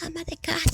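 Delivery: sheepish, embarrassed voice. Retelling how mothers answered when asked their occupation: imitating an ashamed reply. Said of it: "con vergüenza me decían".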